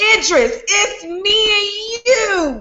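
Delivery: high-pitched, slow, mock pleading wail.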